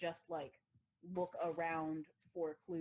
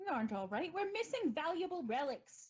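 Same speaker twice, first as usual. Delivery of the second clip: put-on British accent, very high-pitched; 12 semitones higher than usual. Game master voicing a character in a role-play scene: attempted British accent. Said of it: "try to do a British accent".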